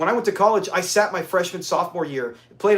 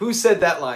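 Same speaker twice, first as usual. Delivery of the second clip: usual speaking voice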